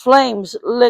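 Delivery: plain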